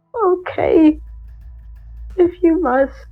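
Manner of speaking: resigned tone. Narrating a game scene, voicing Dave as he gives in: Dave, tearful and defeated. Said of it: "looks down in defeat".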